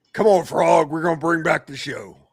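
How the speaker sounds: gravelly voice, every word clearly enunciated. Showing how the Muppet dog should sound, no Cajun accent: gravelly Rolf the dog voice. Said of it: "Just the gravel's there".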